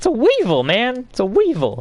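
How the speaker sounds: squeaky, very high, swooping, silly put-on voice. Complaining that a teammate keeps picking it up, the speaker repeats himself, high-pitched voice. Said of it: "say Weevil with a high-pitched voice".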